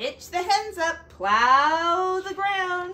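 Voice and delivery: high, bossy, commanding little farmyard rooster voice. Reading a farm story aloud, the narrator voices the rooster giving chores: bossy rooster voice. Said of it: "and his bossy little rooster who crowed, / he heard his bossy rooster who was telling him what he should do. / he heard his bossy rooster who was telling him what he should do. / he heard his bossy ro".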